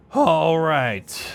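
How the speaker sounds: voice cracking and breaking. Describing a barely blocked attack in a dice game, voice cracking. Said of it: "I don't know why my voice cracked so bad just there".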